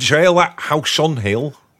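put-on Yorkshire accent. Mocking a board game title that seems to miss a word: yorkshire accent. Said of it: "Sounds like a Yorkshire person saying it".

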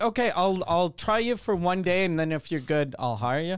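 plain

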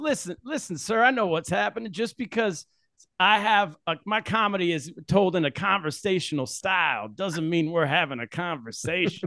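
slow, swinging preacher-like cadence. Imitating a coworker's comedy bit: imitating Tom with a preacher-like cadence. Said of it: "That's a pretty good impression".

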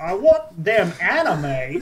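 hammed-up, exaggerated put-on American accent. Switching from an old man accent to do the american accent. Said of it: "I gotta do the American".

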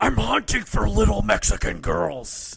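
loud, rough, creaky rasp. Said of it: "his Batman voice".

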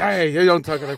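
put-on wasted Irish accent. Imitating wasted people in a bar arguing about politics: imitating a drunk Irish accent. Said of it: "being all, like, you know, Irish about it".

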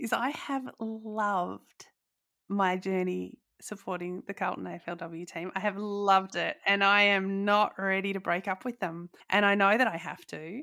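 teary, choked up, loved drawn out. Talking about supporting the carlton aflw team, getting teary. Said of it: "I'm getting teary talking about it".

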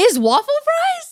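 high, loud, squeaky incredulous disbelief.

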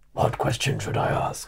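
put-on, whispery, hushed, breathy dragon voice. On a comedy podcast, one co-host keeps repeating a question in a dragon voice. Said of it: "The dragon voice was the question".

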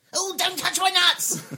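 shrill, very high, very loud squirrel voice. Answering a request to say a line in a squirrel voice: squirrel voice. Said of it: "a squirrel voice".

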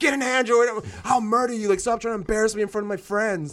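mock loud yelling. Retelling a screaming match with dad over phones: imitating dad yelling. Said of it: "screaming matches with my dad when I was younger 'cause he's like".

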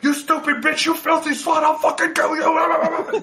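very high, shrill screaming killer-doll voice, drawn-out you. Retelling a movie scene where the doll screams at a woman: imitating Chucky screaming. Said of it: "he starts screaming at this woman".

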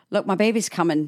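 ordinary talk, nothing marked

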